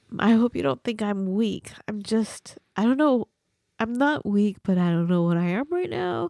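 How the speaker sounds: teary voice, thick and sniffly from crying. A host tells listeners they have been crying all episode, in a sniffly, teary voice. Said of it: "My voice is different because I'm I've just been sniffling".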